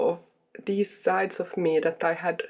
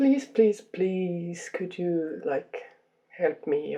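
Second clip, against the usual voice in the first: mock, put-on pleading delivery. Acting out praying to a god above: imitating pleading to god. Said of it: "pleading to that".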